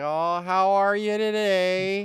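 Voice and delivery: very slow, very drawn-out northern drawl. Speaker shows how they end up talking up north, slow different way of talking. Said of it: "You talk slow. You talk differently. I end up talking different".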